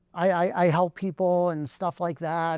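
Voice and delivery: ordinary talk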